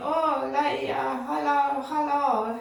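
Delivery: slow, put-on Spanish accent. Retelling what a young man called out while walking past: imitating a spanish accent. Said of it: "in his foreign accent".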